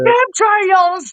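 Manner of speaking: put-on yelled reading. Imitating the author yelling his audiobook narration: imitating a yelled reading. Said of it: "You yelled it".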